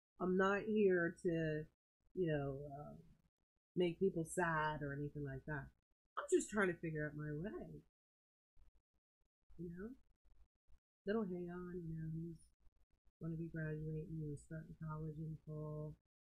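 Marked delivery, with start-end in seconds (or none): 6.2-16.0 low and quiet voice. Speaker talking to viewers about someone graduating, talking low and quiet. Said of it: "I know I'm talking low".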